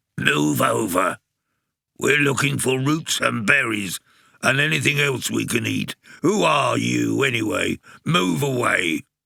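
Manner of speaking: very irritated, cross, husky, rough rasping voice. Reading a story: a badger shoves Fatty in the dark and speaks; very cross, husky badger voice. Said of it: "A very cross, husky voice said".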